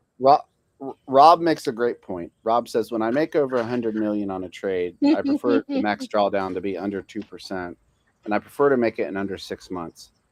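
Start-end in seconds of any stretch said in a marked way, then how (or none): none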